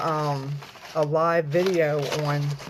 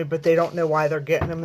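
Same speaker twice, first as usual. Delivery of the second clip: normal talking voice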